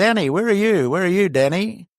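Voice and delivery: high, acted-out calling-out voice. Retelling how Mum shouted for a worker at camp: imitating a shout. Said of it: "she shouted out".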